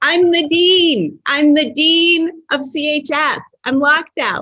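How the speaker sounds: calling out loudly. The dean, locked out, retells yelling into a speakerphone call; retelling a shout. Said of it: "I'm shouting".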